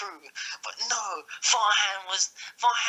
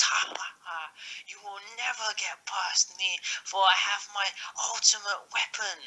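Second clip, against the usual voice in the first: full-on, most evil villain voice; 4 dB quieter than usual. Retelling a story, in Daniel Meekin's most evil voice. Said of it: "He says in his most evil voice".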